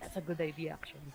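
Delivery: low, hushed, half-whispered stage whisper. Playing Ray, answering Ren's suggestion, half-whispering. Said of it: "Ray will parang sort of whisper".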